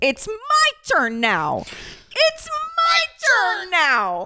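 very high, very slow, drawn-out swooping scream. Recapping what a woman said in an argument, retelling a scream. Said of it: "even though she's screaming".

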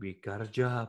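American accent, done on purpose. Showing how the line could have sounded more American, in an American accent. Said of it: "It could have sounded more American if you went".

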